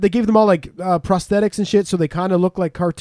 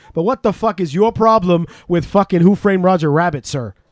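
put-on street-style Brooklyn-type accent. Raising a last beef with another speaker: brooklyn type accent. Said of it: "a Brooklyn type accent".

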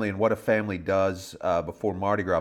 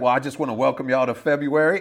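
put-on very stoned, out of it, loud, pitched up; 6 semitones higher, 5 dB louder than usual. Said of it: "he is higher than I have seen".

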